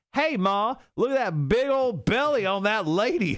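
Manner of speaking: very high, thick country South Carolina holler. Reading out a listener's story, imitating a kid's scream: country south carolina accent. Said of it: "in the most country South Carolina voice screamed".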